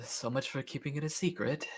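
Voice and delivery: hushed, very quiet mutter under the breath. Playing Owen while others look scared, muttering under his breath. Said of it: "kind of under his breath".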